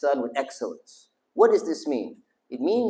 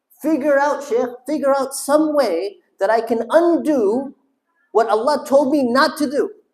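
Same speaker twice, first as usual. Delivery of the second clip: frustrated raised voice, much higher pitch; 10 semitones higher, 5 dB louder than usual. Speaker venting about a question asked over and over, raised frustrated voice. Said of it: "I rarely raise my voice".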